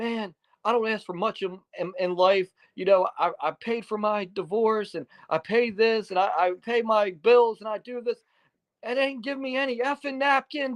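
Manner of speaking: very high-pitched, furious angry yelling. Retelling a friend's angry rant about missing napkins: imitating Rhino yelling angrily. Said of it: "he's just, like, yelling at me".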